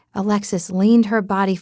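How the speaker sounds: plain reading voice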